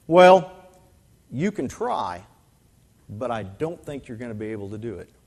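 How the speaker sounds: faintly mocking, dismissive brush-off. Retelling the track coach's response to a freshman: imitating the coach's mocking reply. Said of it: "almost mockingly, he said".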